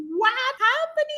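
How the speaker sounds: put-on crying scream. Retelling a painful medical procedure, imitating own tearful scream. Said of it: "I was screaming with tears in my eyes".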